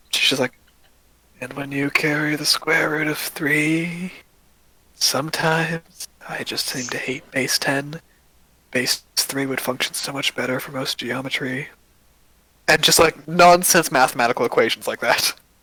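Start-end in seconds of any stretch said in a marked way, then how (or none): 1.4-11.7 squeaky high voice faking sleepy huskiness. Voicing a character babbling math nonsense: high voice trying to sound husky and sleepy. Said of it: "she's trying to do that, but her voice is so high-pitched".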